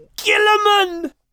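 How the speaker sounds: very high, sudden exclamation. Narrator reads Max exclaiming in reply to God. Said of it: "Exclaimed Max".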